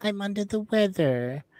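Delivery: cutesy put-on baby talk, high and silly. Imitating how a mother comes in saying she's unwell: imitating a silly baby voice. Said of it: "it's that baby, silly baby voice that Kiki puts on".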